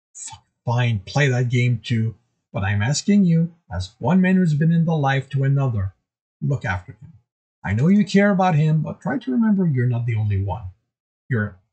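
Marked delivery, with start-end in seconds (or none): none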